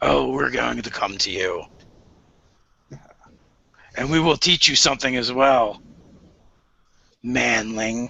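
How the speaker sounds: low demon voice, like many throats at once. Voicing a demon answering a challenge to reveal itself: demon voice from many throats. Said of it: "from multiple throats".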